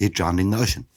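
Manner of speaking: normal talking voice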